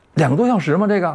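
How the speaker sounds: youthful, surprised voice, high-pitched and fast.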